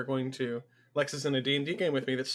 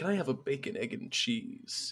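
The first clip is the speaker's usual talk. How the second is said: slow, breathy, whispery, suggestive insinuating tone; 4 dB quieter than usual. Acting out someone ordering food, in a mock-insinuating tone. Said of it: "the tone of voice that always sounds like you're trying to imply something".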